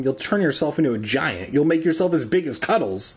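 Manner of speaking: ordinary delivery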